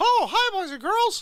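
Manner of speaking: squeaky voice, pitched high and loud. Recalling a stint as Marky Mouse, speaker does the Marky Mouse voice. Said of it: "I was Marky Mouse for a little while".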